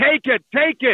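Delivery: play-acted, urgent, repeated yelling, high-pitched, mild. Retelling the movie Liar Liar, where the lawyer yells: imitating Jim Carrey yelling. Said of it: "he starts yelling".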